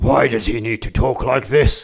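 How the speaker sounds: slow, deep, gravelly vigilante hero voice.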